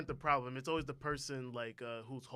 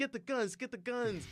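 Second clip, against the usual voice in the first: mock scream, very high, stretched out; 10 semitones higher than usual. Retelling a story where people are attacked: imitating people screaming. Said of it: "they're screaming".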